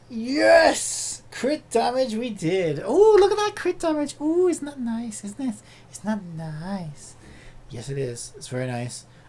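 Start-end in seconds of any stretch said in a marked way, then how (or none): 4.2-9.1 very creepy, unsettling voice, nice drawn out. Player admiring new crit damage in a game, in a very creepy voice. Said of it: "I would said that in a very creepy voice".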